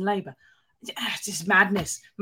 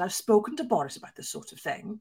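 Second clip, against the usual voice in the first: soft, hushed, put-on Welsh accent; 5 dB quieter than usual. Journalist from The Mirror recounts a phone call, quoting Guto's reply in a Welsh accent. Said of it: "This is my Welsh accent".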